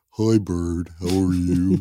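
talking through the nose, muppet-like. Showing off the impression by greeting Bird: Snuffleupagus impression. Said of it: "my snuffleupagus impression".

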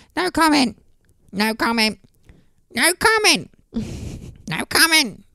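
mad little squeaky voice, tiny and very high. Recounting a man's police interviews, in a squeaky Joe Pasquale voice. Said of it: "in his mad little squeaky Joe Pasquale voice".

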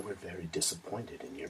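very quiet, low, grave menace, barely audible. Retelling an episode scene where Thrawn addresses a terrified woman, in Thrawn voice. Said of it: "he does his Thrawn voice to her".

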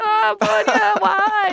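high, slow mock wail. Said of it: "I'm like".

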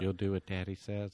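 creepy put-on tv host voice. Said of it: "I like your impression 'cause it's creepier".

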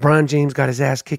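very quiet, hushed, soft-spoken talking. Retelling how he talked while filming a video on a plane: quiet, soft-spoken. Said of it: "I was literally talking like this".

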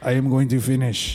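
put-on German accent. Joking about a man's German work ethic, speaker puts on a German accent. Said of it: "speaking English with a German accent".

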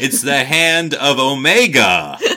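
loud, very slow put-on American accent, word stretched. Discussing an episode, showing what americans sound like with a put-on american accent. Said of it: "That's what Americans sound like".

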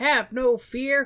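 put-on high, slow, heroic kid voice.

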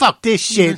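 sudden, very high gangster outburst. Retelling a guy on the air after a bug flies in his mouth, mock gangster outburst. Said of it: "He just goes total gangster on the fucking air".

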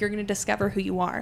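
ordinary talk

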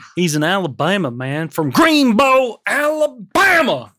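fake, slow, drawling Southern accent. Reading a film summary after being asked to use it: put-on southern accent. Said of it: "in a Southern accent".

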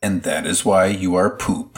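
plain

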